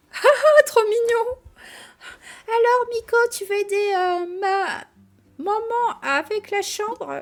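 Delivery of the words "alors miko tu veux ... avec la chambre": put-on little girl voice, higher and louder. Reading a game character's line aloud: imitating Lila's little voice. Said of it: "c'est horrible, la voix que tu fais".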